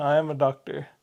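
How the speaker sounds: slight Indian accent. Answering the other speaker's remark about seeing a doctor, slight indian accent. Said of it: "I said it with an Indian accent kind of".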